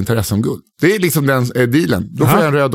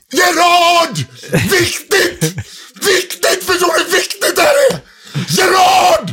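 mock shout, much higher. Retelling how a man stood shouting in the middle of the night: imitating someone shouting. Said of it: "Så han ställde sig och skrek".

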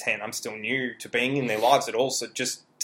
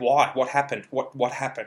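put-on agonized, anguished voice. Retelling a mother's reaction on the phone to bad news: imitating an agonized voice. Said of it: "the agony in her voice down the phone".

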